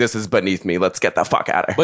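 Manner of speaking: mock-angry, pissed-off woman voice. Retelling a woman upset over couch seating, imitating a pissed-off woman. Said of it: "actually pissed off".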